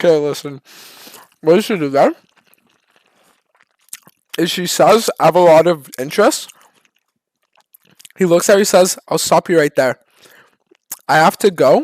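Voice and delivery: speaking through food, chewing while talking. Speaker answers a viewer request to talk while chewing: talking with mouth full. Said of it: "talk with my mouth full while I'm chewing".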